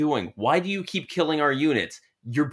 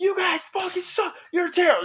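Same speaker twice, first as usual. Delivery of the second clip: mock very high, shrill, all-out shouting. Retelling a kid between rounds of an online match, retelling a kid's shout. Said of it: "shouting at the top of his lungs".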